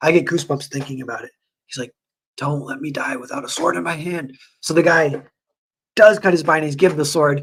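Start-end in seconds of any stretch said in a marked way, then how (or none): 2.4-4.4 heartfelt, emotional, begging and pleading tone. Retelling a scene where an old Viking begs to die armed: imitating an emotional plea. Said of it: "pleading with the dude".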